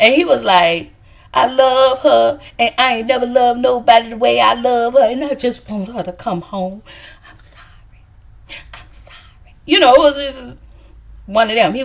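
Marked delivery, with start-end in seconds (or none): 1.3-9.5 put-on quavering voice, shaking throughout, emotional. Retelling a scene with Saint talking about her: Saint's trembling voice. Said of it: "Saint voice start to tremble".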